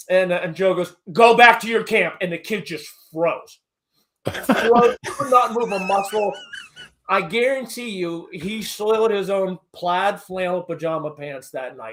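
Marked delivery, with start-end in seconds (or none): 1.1-2.2 hard, stern, no-nonsense raised voice. Retelling a friend ordering a kid away: imitating a stern order. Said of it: "I've never heard him be so stern".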